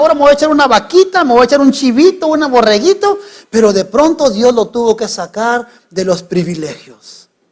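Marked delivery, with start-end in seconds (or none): 0.0-3.2 high-pitched, rushed, smug voice. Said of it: "y él decía".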